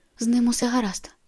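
tense, strained whispering. A woman reassures the narrator while holding back a struggling man, tense whisper. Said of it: "прошепотіла Аліса напружено".

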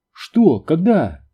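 piercing, shrill, frightened high outcry. Ruth cries out as others fear the power will be cut, shrill frightened voice. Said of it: "скрикнула Рут пронзительным, испуганным голосом".

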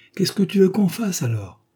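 cried-out exclamation. Madame, taking up the letter again to decipher it, exclaiming. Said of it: "S'écria madame".

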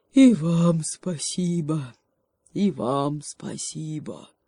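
drowsy, half-asleep, dozing-off voice. The bear wanders back to his den after drumming: sleepy voice. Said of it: "приговаривая сонным голосом".

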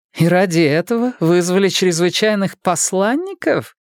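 disdainful, contemptuous rising tone. A woman answers the narrator's carefully chosen explanation, contemptuous. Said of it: "презрительно поинтересовалась женщина".

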